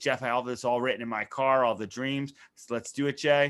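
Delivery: normal talking voice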